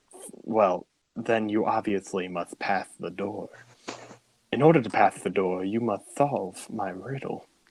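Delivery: speaking with a lisp. Voicing the Naga, demanding a riddle be solved: lisping Naga voice. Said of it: "I have to give him a lisp".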